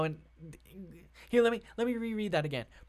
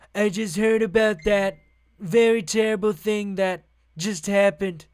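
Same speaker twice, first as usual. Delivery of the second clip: very loud, booming, put-on impersonation voice; 8 dB louder than usual. Reading a reporter's quote aloud, done as a Trump voice. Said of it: "I have to read this in my Trump voice".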